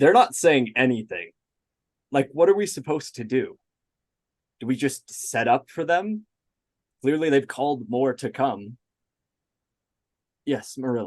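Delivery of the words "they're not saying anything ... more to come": fed up, exasperated and frustrated, at a loss. Voicing a character speaking to the rest of the party, frustrated. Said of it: "you can tell he's like frustrated".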